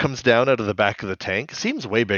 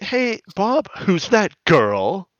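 high, swooping, pointed accusatory tone; 10 semitones higher than usual. Retelling a cartoon scene where a character questions bob: imitating an accusatory tone. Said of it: "very, like, accusatory".

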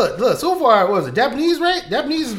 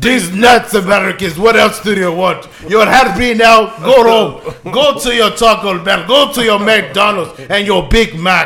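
loud, acted, taunting Russian accent; 5 dB louder than usual. Joking about how to say a phrase in russian: mock russian accent. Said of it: "This is how I say "these nuts" in Russian".

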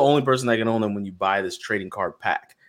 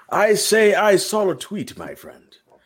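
put-on very high, swooping old English aristocrat accent; 9 semitones higher than usual. Taking up the idea of talking all episode like an old english aristocrat, in that accent. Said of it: "Old English aristocrat yes. accent".

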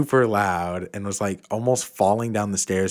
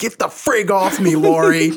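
sudden, shrill, very high, loud scream; 10 semitones higher, 8 dB louder than usual. Retelling what a sleep-talker screamed in the night, retelling a scream. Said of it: "she just screamed".

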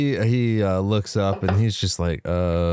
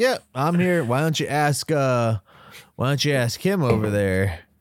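mock casual, unbothered, nonchalant, offhand delivery; 5 semitones higher than usual. Retelling how a stranger answers when confronted: imitating a nonchalant tone. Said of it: "nonchalantly just like".

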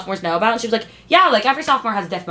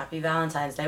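glum, dejected, very depressing tone; 6 semitones lower, 11 dB quieter than usual. Wishing happy valentine's day back: most depressing vocal tone. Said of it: "in the most depressing vocal tone ever".

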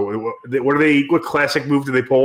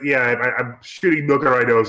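ordinary delivery

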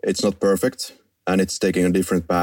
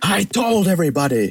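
furious, very high, angry yell; 11 semitones higher than usual. Quoting an angry doctor leaving the asylum: imitating Loomis shouting. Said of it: "and he's shouting".

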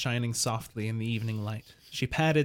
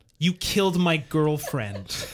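loud, derisive, scornful scoff; 5 semitones higher, 5 dB louder than usual. Told they have a history of conflicts, a man answers, scoffing. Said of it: "scoffed Simon".

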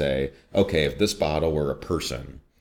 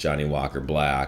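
ordinary talk

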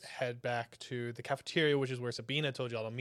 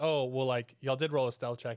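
ordinary delivery

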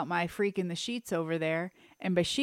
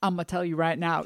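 put-on rural country accent. Teasing the other speaker by repeating their phrase: imitating a country accent. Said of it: "I love when your country comes out".

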